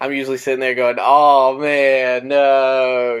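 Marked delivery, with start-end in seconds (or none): 1.0-3.2 put-on, super sarcastic, loud, drawn-out disappointed groan. Retelling own reaction to cancelled plans: imitating own sarcastic reply. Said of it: "super sarcastically".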